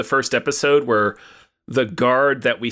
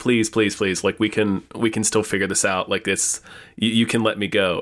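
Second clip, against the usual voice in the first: usual speaking voice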